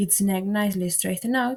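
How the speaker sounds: ordinary delivery, nothing marked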